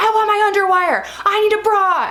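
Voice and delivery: frantic, shrill, very high-pitched screaming. Retelling how a woman banged on the door, imitating her screaming. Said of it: "she's like screaming".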